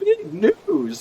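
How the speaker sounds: put-on very high-pitched puppet voice, like a kids' show. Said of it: "is what he says in the Big Bird accent".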